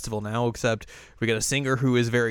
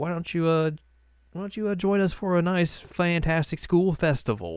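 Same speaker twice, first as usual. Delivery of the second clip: put-on Southern drawl, much higher pitch; 6 semitones higher than usual. Signing off the show and inviting listeners back, in a southern accent. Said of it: "I like how you got a southern accent there".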